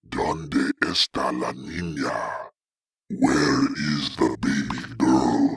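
crackly, low-pitched voice. A voice comes from behind him in the dark; crackly, low-pitched voice. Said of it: "a crackly, low-pitched voice".

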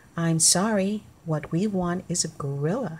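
ordinary delivery

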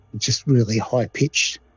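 ordinary delivery

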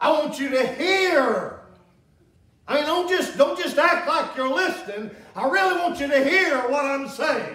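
mock urgent, desperate, pleading insistence. Acting out a father's words to his son: imitating a desperate plea. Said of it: "almost in a desperate way".

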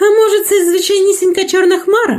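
embarrassed, confused wondering. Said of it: "збентежено промовила мала баба Яга".

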